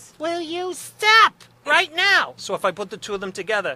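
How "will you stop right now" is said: shrill, very high, very slow, very loud mom voice. Showing how his mother talks: imitating his mother's voice. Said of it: "My mother is".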